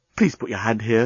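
plain

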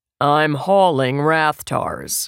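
dry delivery, no audible reaction. Reading a reply to Finn's frantic question in a story, deadpan. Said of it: "Han deadpanned".

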